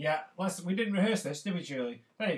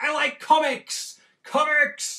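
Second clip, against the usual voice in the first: drawn-out, loud, high-pitched, very slow shout; 9 semitones higher, 8 dB louder than usual. Showing viewers how to say what they like out loud: shouting it loud. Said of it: "You should shout it loud".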